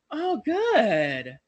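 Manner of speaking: acted, dry, passive-aggressive, sarcastic, drawn-out good. Judging another person's response to an apology, mock-sarcastic. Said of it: "it sounded very sarcastic".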